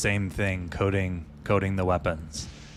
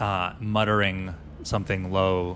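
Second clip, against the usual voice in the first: usual speaking voice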